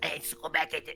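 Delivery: rat creature voice, high-pitched and gravelly. Demonstrating how a rat folk might sound, high-pitched gravelly rat voice. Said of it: "probably higher pitched, maybe gravelly voice".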